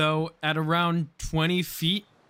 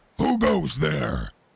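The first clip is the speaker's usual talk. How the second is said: very deep, rough, gravelly voice; 5 semitones lower than usual. Narrating a tabletop scene, an unseen being calls out, very deep gravelly voice. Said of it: "in a very deep and gravelly voice".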